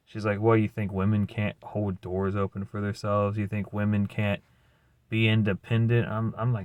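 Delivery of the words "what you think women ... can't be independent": plain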